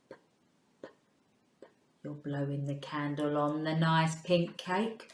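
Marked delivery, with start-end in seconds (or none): 0.1-0.9 breathy, very quiet whispered puff on p. Showing learners the right way after a wrong one: quiet p sound. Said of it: "It's a quiet sound".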